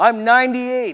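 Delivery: acted proud voice. Telling a joke, voicing the old man answering the doctor, mock-proud announcement. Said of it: "the old man announced very proudly".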